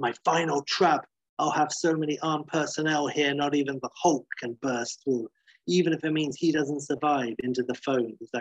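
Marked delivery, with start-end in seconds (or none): none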